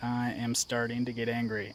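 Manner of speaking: plain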